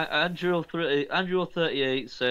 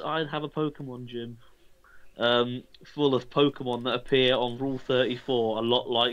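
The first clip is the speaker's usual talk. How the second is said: plain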